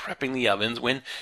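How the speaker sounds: plain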